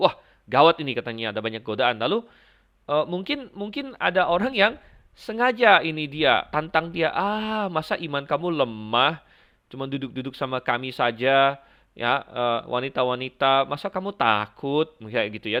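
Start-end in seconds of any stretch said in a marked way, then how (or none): none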